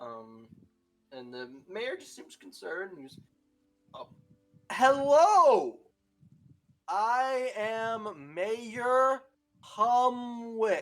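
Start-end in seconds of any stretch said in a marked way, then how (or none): 3.9-10.8 very loud, booming, very slow voice. Voicing the mayor greeting outsiders: speaking slowly. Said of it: "Why is he talking so slow?".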